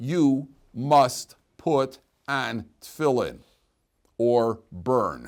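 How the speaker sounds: blunt, very slow and clearly spoken. Explaining how men must be told, the speaker demonstrates telling it straight. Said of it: "The men need to be told straight".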